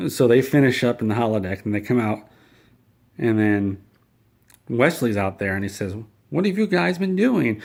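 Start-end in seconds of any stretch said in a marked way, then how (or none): 6.3-7.6 very high, whiny voice. Retelling a scene where Wesley greets the others leaving the holodeck, mock-whiny Wesley voice. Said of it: "he does it in a really whiny voice".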